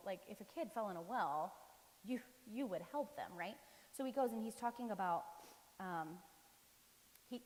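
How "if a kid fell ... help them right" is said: usual speaking voice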